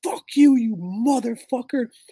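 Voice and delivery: play-acted, high, shrill, all-out top-of-lungs screaming. Speaker retells an Eagles fan yelling at him from the guardrail, retelling a top-of-lungs yell. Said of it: "he is fucking yelling top of his lungs".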